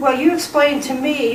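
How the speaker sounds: ordinary delivery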